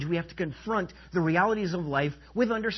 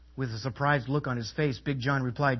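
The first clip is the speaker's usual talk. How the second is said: ordinary talk, nothing marked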